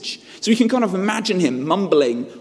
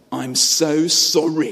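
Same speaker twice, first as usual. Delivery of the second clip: much slower, grudging sarcasm through gritted teeth. Showing the forced apology they'd give their sister, sarcastic apology through gritted teeth. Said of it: "through gritted teeth, you dole out an apology which is laced with sarcasm".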